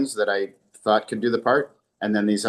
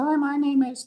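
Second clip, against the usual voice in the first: tiny, very high, squeaky, mousy little voice. The speaker retells a woman introducing herself on her tape, in a mousy little voice. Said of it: "she had a mousy little voice".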